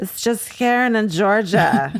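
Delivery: put-on sleepy, boozy slurred drunk voice. Mostly asleep, speaker answers her husband, in a drunk Karen voice. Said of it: "in a drunk Karen voice".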